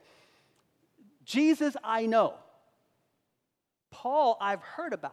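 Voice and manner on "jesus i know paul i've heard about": loud, slow, higher, scornful demon voice. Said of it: "the demon spoke through the man and said".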